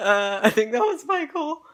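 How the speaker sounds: high, loud giggly voice. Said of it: "I've been giggling".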